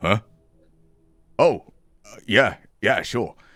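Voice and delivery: put-on orc character voice. Game narrator voicing an orc answering a call to come over, orc voice. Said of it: "one of the orcs just go".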